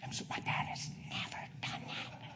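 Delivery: hushed, overcome whisper.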